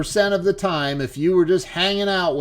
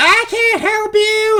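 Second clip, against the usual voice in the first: put-on yell, much higher and slower; 5 dB louder than usual. Retelling a woman in a wheelchair yelling back at a truck driver; retelling a yell back. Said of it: "they're like going at each other".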